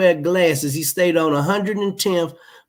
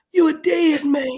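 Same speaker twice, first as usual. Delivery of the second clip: put-on raspy male voice, higher; 9 semitones higher than usual. Retelling how a man talked about a potato chip fall: imitating Ty's raspy voice. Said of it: "that's how he used to talk. He had that raspy voice".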